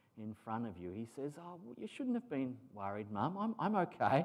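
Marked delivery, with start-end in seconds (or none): 1.4-4.3 very calm, nonchalant, breezy tone, pitched up. Going through a passage, the speaker voices the son's reply to his mum, mock laid-back. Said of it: "very sort of laid back and very calm".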